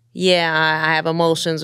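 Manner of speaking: ordinary talk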